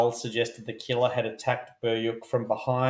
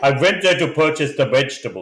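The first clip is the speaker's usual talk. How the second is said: fake, put-on Russian accent; 3 semitones higher, 7 dB louder than usual. Playing along in a group's russian storytelling bit, adding a line in a mock russian accent.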